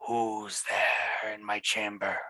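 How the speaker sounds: slow, drawn-out, hushed whispering voice. Voicing a mysterious presence heard in a player's head: whispering voice. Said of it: "you do hear this whispering voice in your head".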